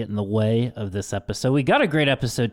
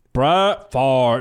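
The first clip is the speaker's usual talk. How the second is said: loud sports-announcer voice, broadcaster style; 5 dB louder than usual. Naming what prompted the topic, the speaker says the name in a John Madden impression. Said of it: "That's my best John Madden impression".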